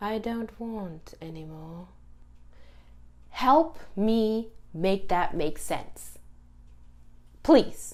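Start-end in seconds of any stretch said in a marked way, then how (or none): 0.0-1.9 hushed, soft, annoyingly calm voice. Complaining about a show, quoting Bran's line: calm Bran impression. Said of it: "in his annoyingly calm voice".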